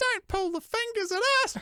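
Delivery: put-on very high, squeaky four-year-old child voice. Retelling how, at four, they answered men in a passing car, squeaky little four-year-old voice. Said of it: "in my squeaky little four-year-old voice".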